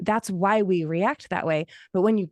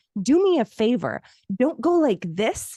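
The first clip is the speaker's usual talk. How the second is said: put-on woman's yell, higher; 3 semitones higher than usual. Retelling what a mean customer said at the table: imitating a lady yelling. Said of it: "the lady yelled at me".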